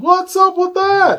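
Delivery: high, comic wondering tone. Describing comedians to the others, doing a Jerry Seinfeld impression. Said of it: "So Seinfeld is the normal guy".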